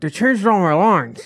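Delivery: high voice, as if a cigarette hangs from lips. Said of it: "she talks like that 'cause she always has a cigarette in her mouth".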